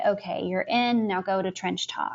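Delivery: ordinary delivery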